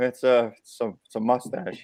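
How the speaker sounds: small, quiet, hushed, halting timid mumble, repeating itself. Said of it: "you hear this quiet voice go".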